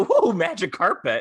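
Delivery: mock awed excitement, high, loud, cooing.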